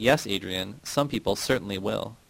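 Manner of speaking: ordinary delivery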